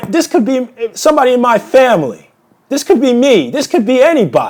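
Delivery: heartfelt, rising pitch. Speaker breaks off mid-rant to apologize, getting emotional. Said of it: "I'm getting a little bit emotional".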